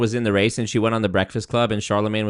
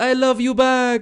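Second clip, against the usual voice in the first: very high, slow, drawn-out Spanish twang; 14 semitones higher, 3 dB louder than usual. Retelling a reply at the Mexican event: Kamala Harris with Spanish twang. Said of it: "a little Spanish twang on it".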